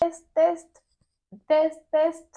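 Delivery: slow, sweet, cute little voice. Testing the microphone before talking to the camera: cute little voice. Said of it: "Pourquoi t'as pris ta petite voix, là, toute mignonne ?".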